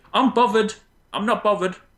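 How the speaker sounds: put-on Cockney accent. Discussing a word added to the dictionary, doing a Cockney-type accent. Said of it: "Cockney type thing".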